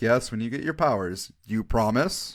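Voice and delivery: ordinary talk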